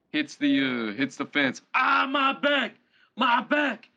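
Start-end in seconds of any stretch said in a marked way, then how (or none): 1.8-3.8 very high, stretched, drawn-out yelp of pain. Speaker retells being in a car that hit a fence, retold yelling in pain. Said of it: "I'm yelling".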